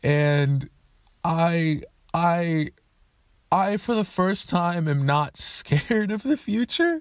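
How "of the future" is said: voice cracking and breaking, pitched up. Speaker thanking viewers near the end of a video, voice cracking. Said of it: "That was an insane voice crack".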